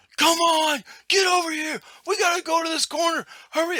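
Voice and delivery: mock shrill, very high screaming. Telling about a guy on a hill, imitating him screaming down at the others. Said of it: "like screaming at them".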